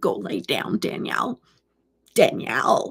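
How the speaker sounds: low, stern, bossy grandmotherly voice. Giving a mom kind of order, sounding like Aunt Evelyn. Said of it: "Kind of sound like Aunt Evelyn right now".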